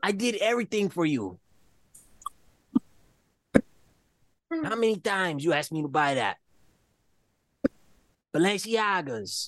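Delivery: put-on boastful voice. Imitating Ray listing the designer brands he bought: Ray impression. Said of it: "that's a good impression".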